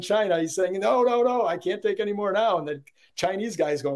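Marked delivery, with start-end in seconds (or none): 0.7-2.6 put-on, yelling, protesting tone. Retelling how an importer yells at the manufacturer: imitating an importer yelling. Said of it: "the importer is yelling at the manufacturer".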